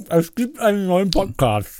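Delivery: speaking through a full mouth. Making an announcement to the other speaker while talking with your mouth full. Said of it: "aber ich rede mit vollem Mund".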